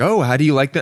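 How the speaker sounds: put-on eager, chirpy, bright, excited voice. Retelling a waitress asking about the mussels: imitating an excited waitress. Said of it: "came up and was really excited".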